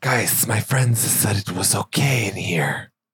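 slithery, snake-like human voice. A game character under speak with animals addresses the group, slithery voice. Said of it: "Why are you talking like that".

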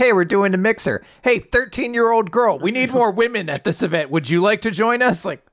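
sleazy, creepy guy voice. Describing a manga character who invites a young girl to a mixer: imitating a creepy guy. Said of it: "creepy, creepy guy".

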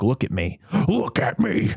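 sudden shift to terrifying tone, swooping pitch. Retelling a movie scene, imitating the Joker's terrifying tone. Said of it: "It's terrifying 'cause he's like".

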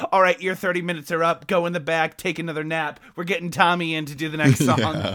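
usual speaking voice

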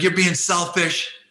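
mock screaming. Retelling a man swearing at him in front of 3,000 people, retelling a scream. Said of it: "Like he's screaming at me".

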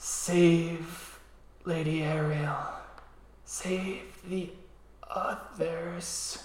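faint, very slow, very drawn-out whisper. Voicing a dying red cap whispering to a player: dying whisper. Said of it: "it starts whispering something to you".

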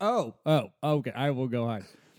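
normal talking voice

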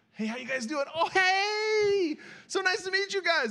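very high, polite, rising, "hey" stretched out. Retelling greeting hosts after a stressful car ride, the voice going up real high. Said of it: "the voice goes up real high".

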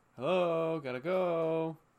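imitated male shouting. Retelling a driver yelling out a van window: imitating a man shouting. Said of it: "he just starts shouting out the window".

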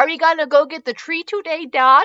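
eager, excited tone. Narrator reads a child's question to their dad: excited. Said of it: "Leo asked excitedly".

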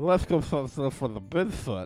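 put-on drunken speech. Mocking the other speaker's tipsy talk about finding Bigfoot: imitating someone drunk. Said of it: "That's not how I sound".

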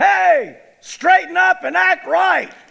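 very high, rough shouted yell. Retelling what was yelled at two men fighting in a parking lot: retelling a yell. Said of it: "I stood up there and I yelled".

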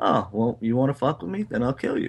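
ordinary talk

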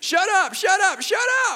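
very high, overjoyed, excited shrieking scream. Retelling how their best friend reacted to news of a third child, retelling excited screaming. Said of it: "jumped up and down screaming".

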